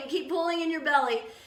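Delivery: ordinary talk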